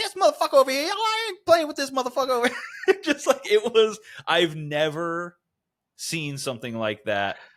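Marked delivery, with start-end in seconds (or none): 0.0-3.0 rattled off high and fast.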